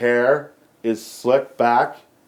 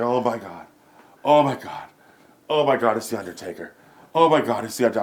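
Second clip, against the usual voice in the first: put-on starstruck, excited, gushing fan voice. Retelling a friend seeing The Undertaker: imitating a starstruck excited fan. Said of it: "He starts marking hard".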